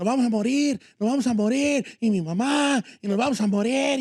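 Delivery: play-acted frantic, panicked, sobbing babble. Retelling a man's panic attack in a crowded car trunk: imitating someone crying in panic. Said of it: "y empezó a llorar".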